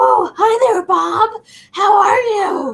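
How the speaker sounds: tiny, small, high voice, very slow and drawn out. Retelling a favorite cartoon moment, imitating Bob's little voices. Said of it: "when Bob makes the little voices".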